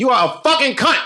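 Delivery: very loud, very high, drawn-out slow scream. Retelling the speaker's girlfriend cursing a woman in her ear, acting out the scream. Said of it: "screamed it in her ear".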